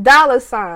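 very loud, full-blast bellowing shout. Spelling out a search while a friend keeps calling them loud, loud. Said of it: "Your loudness".

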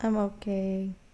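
lifeless, flat delivery. Asked how she is doing, answering in a flat, lifeless voice. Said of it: "You sound dead".

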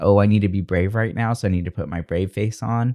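ordinary delivery

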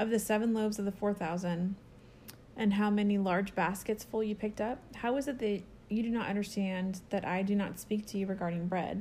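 usual speaking voice

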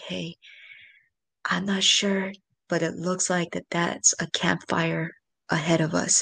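hushed, quiet half-whisper. Retelling how Miguel stopped the group: imitating Miguel half-whispering. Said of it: "He starts whispering to us".

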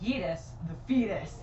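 put-on character voice. Retelling a joke made on a Discord server one night, in Carolina voice. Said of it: "in my best Carolina voice".

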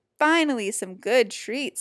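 ordinary delivery

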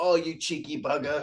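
put-on Cockney accent. Showing friends how people don't talk, in a Cockney accent. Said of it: "Cockney's overplayed".

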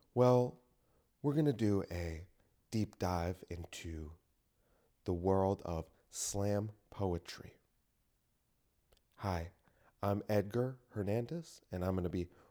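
soft, hushed public radio host voice. Mocking how public radio hosts talk: soft NPR radio voice. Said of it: "They just talk more like this".

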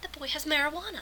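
scandalised, shocked delivery full of gasps. Retelling Brian's reaction to seeing weed, imitating his shocked gasp. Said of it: "He gasps and puts his hand on his mouth and he goes".

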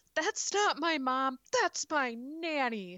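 mock, high, drawn-out shouting. Retelling what a boy shouted at a girl on the bus: imitating a shout.

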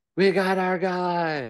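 put-on celebratory yelling. Acting out a scream of joy after a playoff stop: pretend excited screaming. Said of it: "I would run out of the house screaming".

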